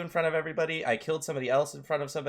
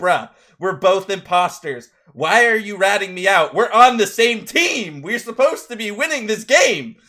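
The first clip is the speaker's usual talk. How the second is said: play-acted, high, furious, very loud angry yelling; 5 semitones higher, 13 dB louder than usual. Retelling getting angry at a teammate who ratted him out: retelling an angry yell. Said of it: "I started yelling at this dude".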